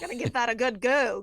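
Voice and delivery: booming, very loud, put-on northern Yankee accent. Trying to talk like her husband's family, doing a Yankee accent. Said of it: "trying to do my Yankee voice".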